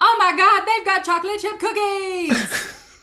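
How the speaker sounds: very loud, high-pitched, bellowing full-force yell. Calling a friend back into the foundry: yelling very loudly. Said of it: "I yell very loudly".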